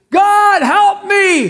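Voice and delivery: desperate loud high screaming.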